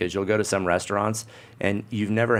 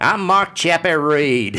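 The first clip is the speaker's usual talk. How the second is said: put-on Australian accent, loud and high; 8 semitones higher, 8 dB louder than usual. Explaining how the film Chopper teaches anybody the accent, do a Chopper Read voice with an Australian accent. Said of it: "a show with an Australian accent".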